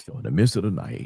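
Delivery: late-night quiet storm radio DJ voice. Telling a story about Lethal in the night, in a quiet storm voice. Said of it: "I got to do this in the quiet storm voice".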